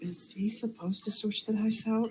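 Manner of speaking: high-pitched, hushed half-whisper under the breath. A game master voices Alicia, leaning toward a player: half-whispering. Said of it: "looks to you and whispers".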